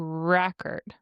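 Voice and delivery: record with stress on first syllable rec. Explaining the noun form of a word, stress on rec in record. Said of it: "the first part of the word is emphasized, like record. That's the noun".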